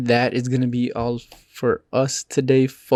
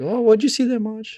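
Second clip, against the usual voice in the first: put-on awkward Minnesota accent, pitched very high; 9 semitones higher than usual. Acting out a favorite part where they investigate the car crash, in a bad Minnesotan accent. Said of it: "A bad Canadian accent".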